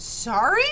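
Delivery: sudden disbelieving outburst. Narrating Joel answering his father's apology, blurted in astonishment. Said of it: "Joel blurted".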